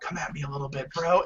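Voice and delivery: in-character half-whisper, very hushed, barely audible. Playing a character who pushes another and half-whispers to him: half-whispering in character. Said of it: "and then I whisper to him".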